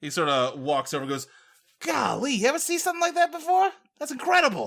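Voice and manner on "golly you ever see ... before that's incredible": very high detective voice, sounding amazed. Voicing a character who walks over to the others: Columbo voice. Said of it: "I hate that you're gonna make us fight Columbo".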